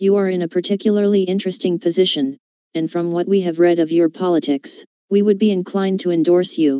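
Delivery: machine-like, robotic, synthetic computer voice. Reading out the reply a page sent to a Republican, robot voice. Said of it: "I used a robot voice to say it".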